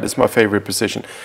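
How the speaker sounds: hushed sarcastic tone, meaning the opposite. Pointing out a weak rowing position with dropped elbows: sarcastic. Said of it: "I'm being sarcastic".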